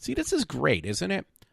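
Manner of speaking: sardonic, meaning the opposite. Reacting to a news story just read aloud: sarcastic. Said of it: "I'm being sarcastic".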